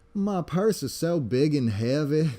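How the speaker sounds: laid-on, put-on Southern belle accent and voice. Retelling a cartoon scene where a character disguises as a woman: imitating SpongeBob's Southern Belle accent. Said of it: "this, like, Southern Belle accent".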